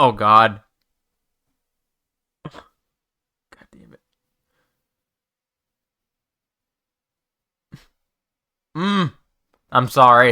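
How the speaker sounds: on the verge of tears. Talking about old game content being removed, fighting back tears. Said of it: "I'm trying to fight back tears".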